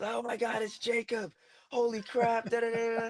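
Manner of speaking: mock very high, drawn-out, excited shriek at full volume. Recalling his reaction when someone made his debut, reenacting screaming at full lungs. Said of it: "I was screaming at the top of my lungs".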